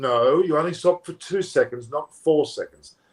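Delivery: ordinary delivery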